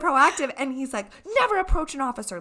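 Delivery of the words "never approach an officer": put-on scream, higher and louder. Retelling a run-in with the cops: imitating a screaming officer.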